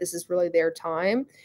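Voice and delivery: ordinary talk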